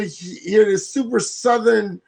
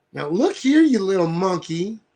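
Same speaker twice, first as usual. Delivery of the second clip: put-on broadest, over-the-top deep-South accent, laid on thick. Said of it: "Her super southernest accent ever".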